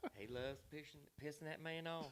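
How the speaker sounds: put-on hushed, soft, high old Southern lady voice. Speaker quotes Melissa laughing about him annoying Josh, Melissa voice. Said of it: "I love your Melissa voice".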